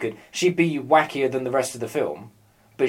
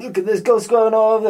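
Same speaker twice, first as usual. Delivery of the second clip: bad, loud, high-pitched, belted New York accent; 10 semitones higher, 6 dB louder than usual. Retelling how a New York man talked as he pulled up, Rocky-style crappy New York accent. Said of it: "I do it like Rocky".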